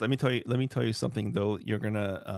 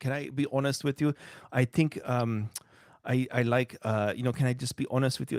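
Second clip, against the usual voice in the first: put-on Polish accent; 3 semitones higher than usual. Imitating the parents' way of speaking, in a Polish accent. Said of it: "this stupid Polish accent".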